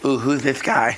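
lisping character voice. Describing a friend chasing guys in drag: Kim Chi impression with lisp. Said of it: "I like your Kim Chi impression".

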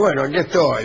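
normal talking voice

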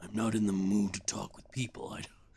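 demonic voice. Voicing a character answering another man, in a demon voice. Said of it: "I'm making him sound like a demon".

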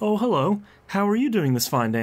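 gentle, light, mild, unaggressive voice, pitched high. Imitating a character's polite greeting that is not aggressively yelling. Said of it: "to hear him being like".

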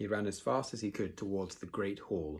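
ordinary delivery

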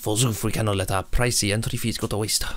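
put-on Scottish accent. A costumed theme-park visitor narrating the day, in a scottish accent. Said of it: "He's become Scottish".

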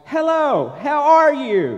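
bright, high recorded cheer. Speaker imitating the robocalls they receive: imitating a perky robocall voice. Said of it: "this perky, positive-sounding voice".

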